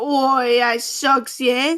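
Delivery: loud, slow fake Australian accent. Addressing any offended Australians in chat, in a mock Australian accent that sounds British. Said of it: "That's British".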